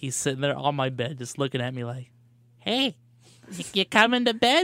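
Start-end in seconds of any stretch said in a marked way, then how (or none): 2.6-4.6 sweet, high, cute little talking-cat voice. Speaker telling how the cat waited on the bed at night, Junior the cat's voice. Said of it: "is that your like voice of what your cat".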